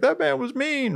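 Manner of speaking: acted, very high, tearful, weepy little-child sobbing. Speaker retells their child crying after a mechanic yelled, imitating a child crying. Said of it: "crying, like".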